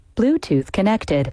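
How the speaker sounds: automated device announcement voice. Showing the voice she uses as a voice actor: Bluetooth announcement voice. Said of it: "The lady who tells you your Bluetooth is connected".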